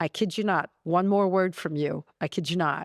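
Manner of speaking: stern, angry, fed-up tone. Retelling a husband's warning during a storm: imitating an angry husband. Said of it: "He was so mad".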